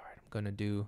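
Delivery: mock soft-spoken voice. Retelling what his masseuse said during a massage, imitating soft speaking. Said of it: "he's like soft speaking".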